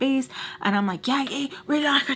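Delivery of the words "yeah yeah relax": put-on scream, higher pitch. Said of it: "just screaming at each other".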